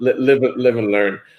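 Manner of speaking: normal talking voice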